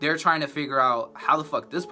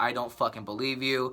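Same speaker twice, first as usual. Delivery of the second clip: put-on crying, tearful and panicked; 4 dB quieter than usual. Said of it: "I'm over here crying".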